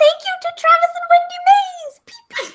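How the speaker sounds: cutesy little bird voice, high and slow. Asked for a cute talking bird, the speaker reads listener thank-yous in a cute bird voice. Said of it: "what is your idea of like a cute bird?".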